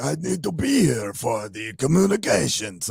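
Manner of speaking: bad put-on Persian accent, slow, high, drifting Spanish-sounding. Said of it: "was that your Persian accent?".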